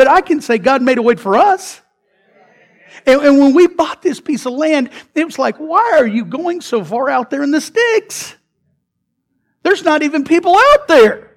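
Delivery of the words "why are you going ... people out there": high, squeaky cartoon voice swooping around. Telling how the church bought land far out, the speaker quotes doubters in a Mickey Mouse voice. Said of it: "in my Mickey Mouse voice".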